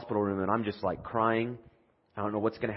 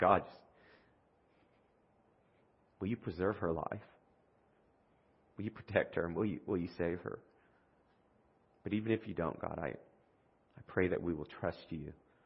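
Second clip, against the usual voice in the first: acted, tearful, bawling, sobbing voice; 3 semitones lower, 8 dB quieter than usual. Speaker reenacts praying while holding hands in a hospital room, reenacting a bawling prayer. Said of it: "I'm just bawling like a baby, kind of like this".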